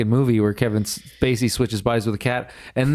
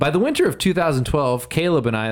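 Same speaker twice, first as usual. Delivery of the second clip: ordinary talk, nothing marked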